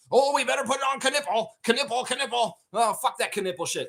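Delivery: put-on very high, out-of-control, unhinged ranting. Speaker admits losing control mid-rant; out-of-control ranting. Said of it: "I'm out of control right now".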